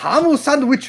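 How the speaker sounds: English with Japanese pronunciation. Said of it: "you try right now".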